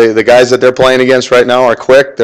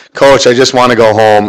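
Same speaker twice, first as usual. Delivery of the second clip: plain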